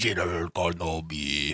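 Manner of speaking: terrible villain voice, dropped very deep. Retelling a movie scene line by line: terrible General Grievous voice. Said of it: "it's a pretty terrible General Grievous".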